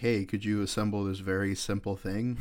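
plain

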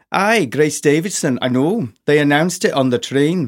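put-on Scottish accent. Reading a story aloud, voicing a character's reply to his friend in a scottish accent. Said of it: "I will attempt a Scottish accent".

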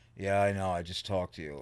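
put-on defeated tone. Retelling a call back to a guy, imitating a defeated voice. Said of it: "just defeated in his voice".

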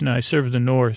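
normal talking voice

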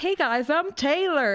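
confident country twang. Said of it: "She's so country".

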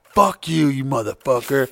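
furious, angry swearing outburst. Retelling a co-host's outburst at the end of a show: imitating someone angry. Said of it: "She'd get really angry and shit".

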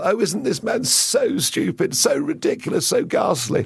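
giggly schoolgirl titter throughout. Act out the reaction of those convinced Hillary would win, Theresa May giggling like a schoolgirl. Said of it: "Theresa May giggling like a schoolgirl".

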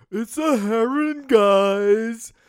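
grating, very high, very slow, loud annoying voice. Previewing DC United's visit from Inter Miami, in a really annoying voice. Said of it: "pointing that out in a really annoying voice".

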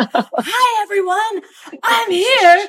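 play-acted, very slow, very high, booming drawn-out yell. Speaker retells Jason starting his live chat at the house, imitating Jason yelling. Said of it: "I would hear Jason like yelling into space".

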